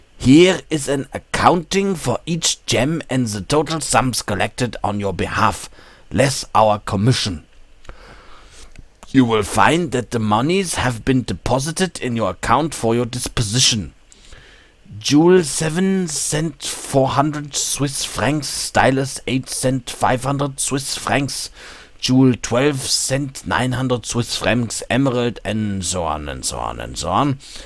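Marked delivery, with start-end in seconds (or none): 0.2-25.4 higher-pitched, mock German accent. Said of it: "I have to read this with a German accent".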